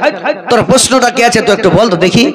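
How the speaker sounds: high-pitched, annoyed anger.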